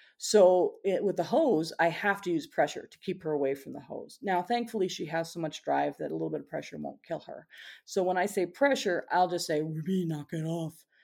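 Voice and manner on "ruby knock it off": scary, stern telling-off tone. Stopping her from attacking the hose, said in a scary voice. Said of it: "in that kind of scary, ooh, scary voice".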